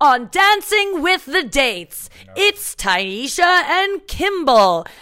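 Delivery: put-on TV announcer voice, loud and slow. Showing how the TV work goes, doing a fake announcer voice. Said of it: "you're doing fake anno-, announcer voices".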